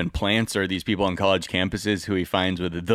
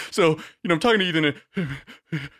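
higher, put-on hyperventilating nervous voice; 7 semitones higher than usual. Imitating Crowder before the debate: imitating Crowder's hyperventilating voice. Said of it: "hyperventilating, "I'm speaking at the top of my breath" voice".

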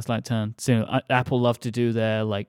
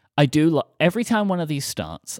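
ordinary delivery

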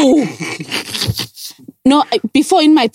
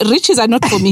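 ordinary talk

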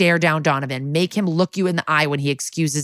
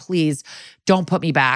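mock begging tone, slower. Speaker recapping a court scene, acting out the man begging not to be sent back. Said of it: "And he begs".

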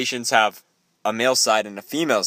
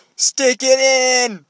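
put-on scream, higher and louder; 13 semitones higher, 5 dB louder than usual. Retelling the kids in the other cabin at night: imitating someone screaming. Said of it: "you wake up to them screaming".

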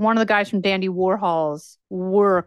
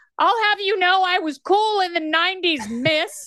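very high, playfully indignant, pretend-offended voice; 11 semitones higher than usual. Retelling her reply to her 14-year-old daughter's teasing, mock-indignant retort. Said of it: "mock-indignant retort to teasing daughter".

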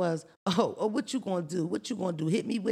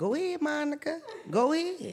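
put-on high voice speaking through laughter; 7 semitones higher than usual. Retelling a fight, quoting the neighbor: imitating a laughing neighbor. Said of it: "the neighbor was laughing".

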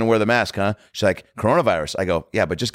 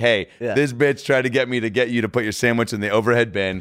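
ordinary delivery

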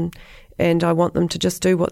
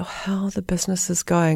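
put-on gloomy, funereal tone; 3 dB quieter than usual. Retelling how people asked about the business: imitating a funereal tone. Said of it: "like in a funereal tone".

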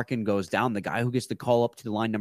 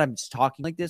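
normal talking voice

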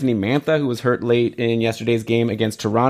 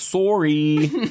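sorry said annoyingly in put-on Canadian accent; 4 semitones higher than usual. Showing the canadian bit the speaker likes to do: canadian accent on sorry. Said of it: "I like to do the Canadian, like".

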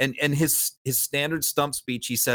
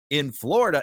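very condescending, patronizing, talking-down tone. Imitating a politician answering every question: mock condescending tone. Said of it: "in that very condescending tone".

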